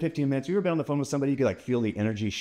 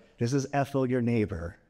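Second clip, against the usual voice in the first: put-on sweet, warm old woman voice. Retelling a phone call from a neighbor, in a sweet, warm grandma voice. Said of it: "that sweet, warm, like grandma voice".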